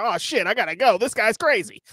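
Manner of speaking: high, rattled, spooked tough-guy voice. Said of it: "Then he's like".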